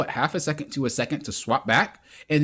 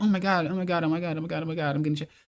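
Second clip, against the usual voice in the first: fake, scared, panicked delivery; 3 dB quieter than usual. Coaching a player on a move, the speaker demonstrates pretending to be scared. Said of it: "act like I'm scared".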